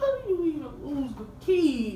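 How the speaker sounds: high, overdramatic crying wail.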